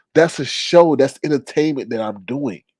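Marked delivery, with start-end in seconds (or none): none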